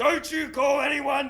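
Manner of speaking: high yelling voice. Retelling the dad at the door: imitating dad yelling. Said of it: "He starts yelling at me".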